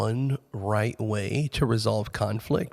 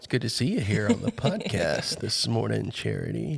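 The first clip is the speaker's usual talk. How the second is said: sarcastic, mock-polite tone. Greeting a co-host who arrived five minutes late: sarcastic greeting. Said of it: "he's being sarcastic 'cause I was".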